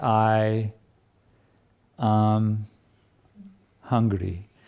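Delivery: very slow, drawn-out first word, pauses between words. Speaker imitates people who pause between each word to remember the self, very slowly. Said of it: "they would speak very slowly".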